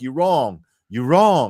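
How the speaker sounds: mock flustered, panicked, stumbling over the words. Retelling a caller who was caught out: imitating a panicked caller. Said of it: "he panics".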